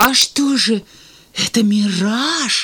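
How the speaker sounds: very slow, scared, frightened voice. Reading one character's question after another scolds him, a frightened question. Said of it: "испуганно спросил Алик".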